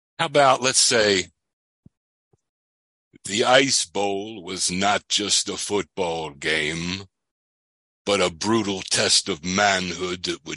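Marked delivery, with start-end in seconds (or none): 3.3-10.6 dramatic football commentator voice. Asked for a couple of sentences about the Ice Bowl: Facenda narrator voice. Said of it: "like couple sentences in the Facenda voice".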